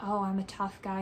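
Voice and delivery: ordinary talk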